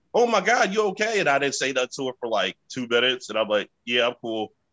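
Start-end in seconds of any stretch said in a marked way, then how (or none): 0.1-1.2 put-on high-pitched scream. Retelling how the person they were with reacted after a fall: retelling a scream. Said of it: "she was like screaming like".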